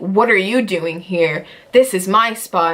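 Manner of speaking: mock, snippy, attitude-laden, possessive, territorial tone. Retelling a coworker's complaint about a spot: imitating a lady with attitude. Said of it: "this lady comes up to me with an attitude like".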